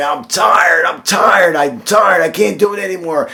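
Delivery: put-on yelling. Retelling how a man crawling toward the end zone called out, imitating someone yelling. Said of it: "the coach is yelling back".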